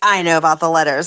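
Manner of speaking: smugly knowing, self-satisfied tone. Retelling what he said to her about the letters, imitating a smug tone. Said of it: "And he said it so smugly".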